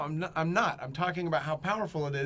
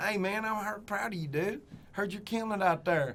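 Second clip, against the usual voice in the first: caricatured, laid-on exaggerated country drawl; 4 semitones higher than usual. Mocking how people talk to make themselves country caricatures: caricature country voice. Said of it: "talk like this".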